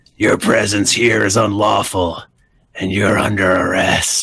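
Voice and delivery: rough-edged, gruff voice. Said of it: "you hear a gruff voice say".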